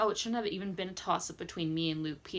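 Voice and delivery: ordinary talk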